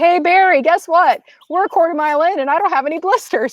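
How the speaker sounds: loud shout. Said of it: "I'm, like, shouting".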